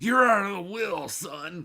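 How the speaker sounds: put-on, high-pitched, loud old grandpa voice. Asked whether the voice is Grandpa, answering in an old grandpa voice. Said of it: "Is that Grandpa?".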